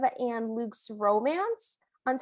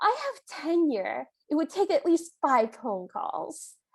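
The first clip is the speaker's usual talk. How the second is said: high, slow, very upset retort-like delivery. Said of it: "very upset".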